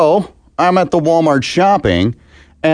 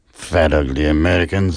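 fake French accent verging on Russian; 9 semitones lower, 3 dB quieter than usual. Mocking Americans for wasting food: put-on French accent. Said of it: "I don't know why I went French all of a sudden".

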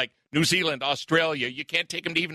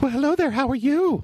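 very high-pitched put-on woman's voice; 9 semitones higher, 4 dB louder than usual. Answering a dare to impersonate a woman: impersonating a woman. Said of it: "impersonate a female".

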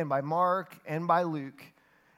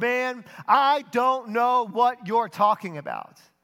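loud, angry, indignant, defensive yelling; 5 semitones higher, 8 dB louder than usual. Retelling Peter's answer to those who recognize his accent, retelling an angry indignant yell. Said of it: "indignant and angry and self-protective, ... yells".

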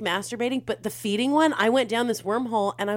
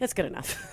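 whispered, breathy, flat, barely bothered, unenthusiastic; 7 dB quieter than usual. Retelling how someone answered with no enthusiasm: imitating an unenthusiastic tone. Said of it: "he's not enthusiastic at all".

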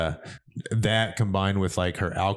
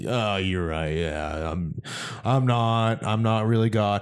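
mock drunken slurred-style speech. Retelling what she said when she was drunk: imitating someone drunk. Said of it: "all fucked up and be like".

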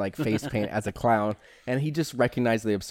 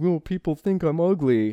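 fake crying, pitched up; 6 semitones higher, 3 dB louder than usual. Describing a villain's scene with a little girl: imitating fake crying. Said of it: "he pretends to cry".

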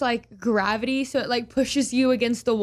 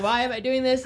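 ordinary talk

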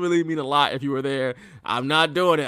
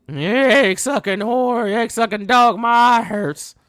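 put-on wrestler voice in pain, higher pitch; 6 semitones higher, 4 dB louder than usual. Retelling a wrestling match, doing a Terry Funk impersonation crying about his eye. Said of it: "That's my Terry Funk impersonation".

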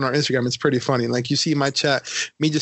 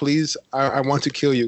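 mock polite, courteous manner. Retelling asking a game player's permission to kill him: imitating a very polite request. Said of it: "in a very polite manner".

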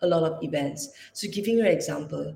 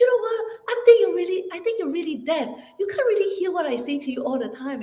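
acted, exasperated, very high-pitched frustrated yelling; 12 semitones higher than usual. Recalling a frustrated cousin who lived with them; retelling her shout. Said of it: "she just shouted at me and say".

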